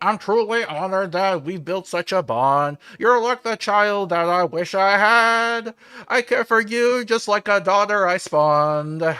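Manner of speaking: very high little radio voice. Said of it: "he goes in his little radio voice".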